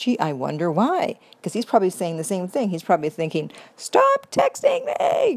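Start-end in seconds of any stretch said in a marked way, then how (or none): 3.8-5.4 voice pushed way up, very high-pitched. Voicing what he is probably thinking: high-pitched voice. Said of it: "But not in that high a voice".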